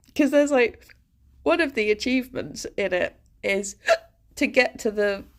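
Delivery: halting speech broken by hiccups mid-phrase. Streamer talking about a game, speaking with hiccups. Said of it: "Sorry, I have the hiccups".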